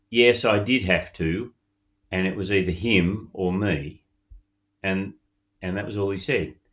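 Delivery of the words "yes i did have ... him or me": plain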